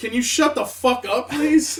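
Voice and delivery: loud screamed, yelled outburst. Speaker recounts a loud interviewer nearby, retelling William Shatner's yell. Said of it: "William Shatner just yells out".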